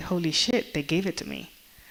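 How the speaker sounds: plain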